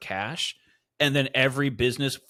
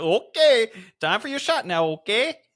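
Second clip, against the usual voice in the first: put-on Michigan or Minnesota accent, raised pitch; 9 semitones higher, 6 dB louder than usual. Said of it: "He's from Michigan or Minnesota".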